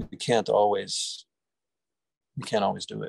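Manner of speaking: voice catching a little, slightly choked up with emotion. Addressing a group before opening the discussion, choking up a little. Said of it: "I'm choking up a little as I say that".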